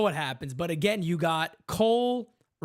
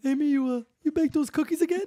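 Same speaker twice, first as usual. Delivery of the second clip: high, squeaky put-on voice pushed way up; 9 semitones higher than usual. Imitating how Gerrit Cole talks to Amy: Gerrit Cole voice. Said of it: "How does his voice go?".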